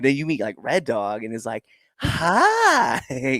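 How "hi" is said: super high-pitched, annoying, grating voice. Showing the different sides of himself, super high-pitched Red Dog voice. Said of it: "like super high pitched, super annoying".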